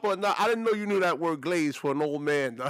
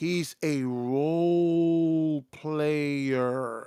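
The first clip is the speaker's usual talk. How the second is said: very slow, each word laid down separately; 4 semitones lower than usual. Making a point about a basketball player, said with a very slow delivery. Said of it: "I'm gonna say this really slowly".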